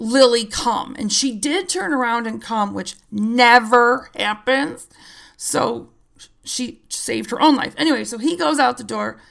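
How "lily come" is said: ordinary delivery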